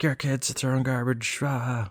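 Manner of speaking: high, soft mock half-yell. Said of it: "started yelling".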